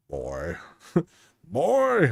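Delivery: voice of a warrior god. Showing a face swap of Kratos, attempting his voice: Kratos voice impression. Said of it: "I wish I could do his voice better".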